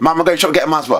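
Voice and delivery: very fast, high, loud, rattled off in one burst. Retelling how he once spoke to his mom to avoid a stutter, very fast. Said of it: "I'd have to speak really fast".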